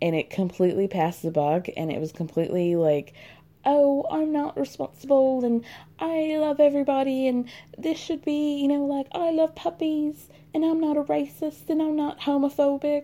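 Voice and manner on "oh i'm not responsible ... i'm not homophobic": very high-pitched chimney-sweep Cockney voice. Mocking a statement that passed the buck, do Lisa Vanderpump as a chimney sweep. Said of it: "making Lisa sound like a chimney sweep".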